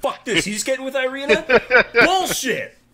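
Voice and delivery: play-acted furious screeching rant, very high and loud. Joking with the group that Zabu quit the game, imitating Zabu's angry rage quit. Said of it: "Did Zabu just rage quit?".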